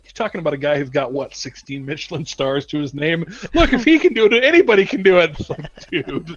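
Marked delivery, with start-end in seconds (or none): 3.6-5.4 thick put-on Scottish accent, raised and high. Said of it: "this thick Scottish accent".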